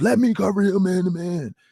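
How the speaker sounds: mild, high-pitched yell. Retelling a player demanding coverage from coaches: imitating someone screaming. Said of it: "he was screaming at the coaches".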